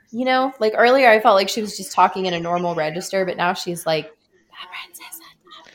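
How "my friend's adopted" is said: secretive, hushed, breathy whisper. Commenting on a girl telling her friends, voice her line, imitating her whispering. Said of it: "at least she's whispering now".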